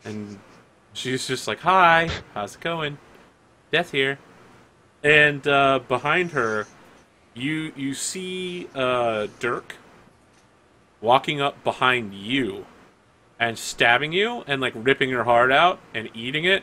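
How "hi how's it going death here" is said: put-on small child's voice, like a six-year-old girl. Voicing Death, who appears as a six-year-old girl: six-year-old girl voice. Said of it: "a six-year-old girl".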